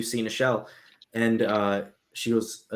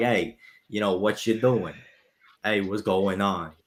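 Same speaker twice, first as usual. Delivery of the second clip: casual New England accent. A streamer shows how easily they slip into a new england accent. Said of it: "go from like this to talking like this".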